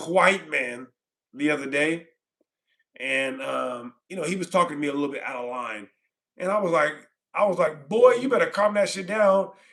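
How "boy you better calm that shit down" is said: heated, angry, threatening tone. Retelling what they told an old man who was out of line, retelling an angry warning. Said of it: "I think I was reliving the situation".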